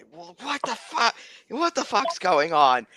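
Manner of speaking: confused, high, bewildered yelled outburst. Voicing a half orc as swords are drawn: bewildered outburst. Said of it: "the half orc is like".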